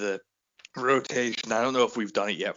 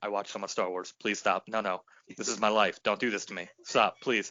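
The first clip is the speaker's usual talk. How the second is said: muttering quietly under the breath. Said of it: "under my breath just muttering".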